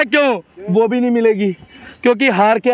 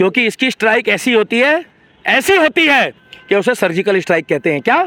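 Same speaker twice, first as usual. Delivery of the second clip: usual speaking voice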